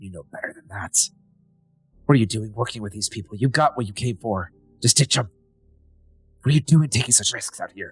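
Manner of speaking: deep, gruff, rushed half-whisper, close in. Narrating a scene, the father half-whispers in the listener's ear, deeper gruffer half-whisper. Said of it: "A very deeper, gruffer voice. Your father whispering in your ear".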